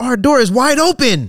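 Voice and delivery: very high, very slow, drawn-out dramatic anime-style outcry. Retelling what a friend said on reaching their room, dramatic anime-style exclamation. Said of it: "like it was an anime".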